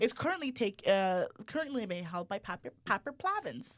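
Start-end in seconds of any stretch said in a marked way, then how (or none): 2.9-3.8 high country twang on the name. Naming the current holder of the student union presidency: country accent. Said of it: "I said that in the country accent".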